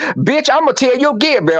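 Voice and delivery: voice climbing very high. Retelling a confrontation once friends showed up: retelling own louder voice. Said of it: "my voice got a little louder".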